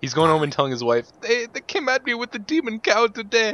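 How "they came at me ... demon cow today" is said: botched, fake German accent, pitched very high. Mocking a man who quit, imagining him telling his wife: bad German accent. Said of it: "That was supposed to be German".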